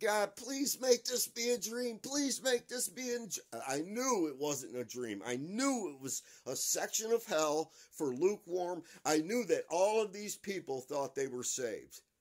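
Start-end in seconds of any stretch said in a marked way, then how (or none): 0.0-3.6 shrill, very high-pitched screaming plea. Retelling running through a vision of hell, praying aloud: retelling own screaming. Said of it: "and I was screaming".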